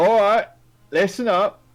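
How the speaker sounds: very high, loud shout. Voicing a guard calling for attention: Larry shouting. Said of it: "Larry just, um, shouts".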